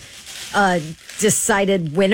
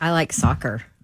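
letdown tone, lower; 4 semitones lower than usual. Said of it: "Why'd you sound so disappointed about it?".

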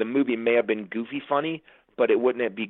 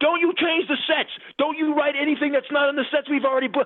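mock high, shrill screaming rant. Retelling a phone call with the line producer, imitating Randy screaming. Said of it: "he starts screaming on the phone".

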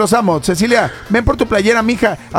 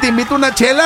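usual speaking voice

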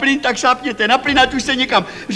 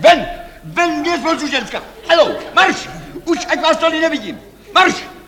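furious, angry, bossy and dismissive tone; 3 semitones higher than usual. In a scene, a speaker orders a woman out: shouting angrily. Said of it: "Nekřičte".

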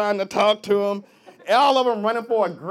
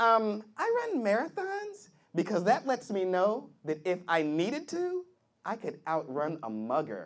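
put-on girl voice, quieter; 3 semitones higher, 8 dB quieter than usual.

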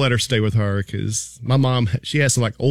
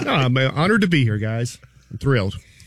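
ordinary delivery

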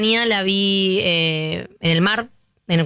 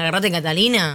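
ordinary talk, nothing marked

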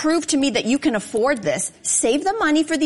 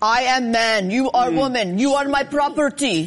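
put-on ancient Roman accent, Russian-sounding. Playing devil's advocate about engagement rings, voicing ancient Romans in a Russian-sounding Roman accent. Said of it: "Very good Roman accent".

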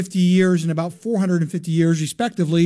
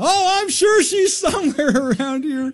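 very high, overplayed, fake wide-awake alert voice; 9 semitones higher than usual. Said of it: "You pull that hello".

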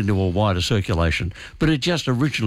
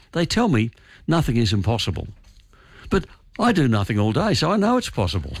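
plain

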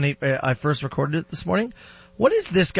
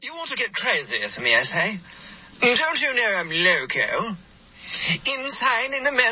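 higher, put-on, attempted British accent; 6 semitones higher than usual. Retelling another man's attempt at a line, doing a british accent impression. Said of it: "He then tried one with a British accent".

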